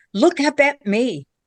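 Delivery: loud, carrying stage whisper. Retelling a voice heard while videoing up into a tree: imitating a loud whisper. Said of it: "loud whisper".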